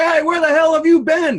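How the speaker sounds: put-on British accent, pitched very high. Retelling an actor on set greeting Han Solo, in a British accent. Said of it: "In his British accent".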